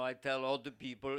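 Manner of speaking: put-on voice with an Austrian accent. Quoting a movie star's direct words: imitating his Austrian accent. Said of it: "It's fun to do his voice".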